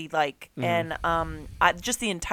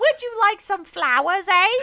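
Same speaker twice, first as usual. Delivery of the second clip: very high, loud, put-on British accent; 13 semitones higher, 5 dB louder than usual. Friends joking about British accents, one answers in a Monty Python British accent. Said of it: "it's like the Monty Python".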